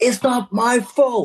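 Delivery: very high, shrill scream. Retelling a stalled train, speaker quotes herself answering an old lady: re-enacting screaming back. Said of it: "I was screaming back".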